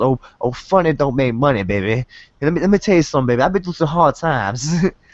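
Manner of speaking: wrestling promo style delivery. Recalling a wrestler from back in the day: Dusty Rhodes impression. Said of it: "That's like the only impression I can do".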